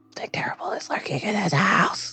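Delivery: hushed, secretive whisper under the breath. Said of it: "You didn't have to whisper that".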